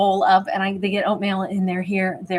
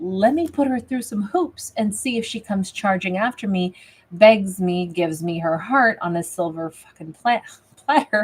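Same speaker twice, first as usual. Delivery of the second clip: normal talking voice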